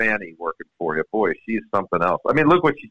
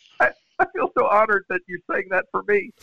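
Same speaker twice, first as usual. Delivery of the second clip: mock, very high, laughing, on the edge of crying; 10 semitones higher than usual. Retelling a golfer's reaction to his caddie, imitating Fred Funk almost crying. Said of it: "he's almost crying, going".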